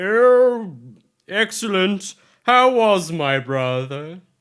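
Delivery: very high, slow, drawn-out "oh" pitched way up. Voicing Harbin greeting the returning player: Harbin voice. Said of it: "And Harbin's like".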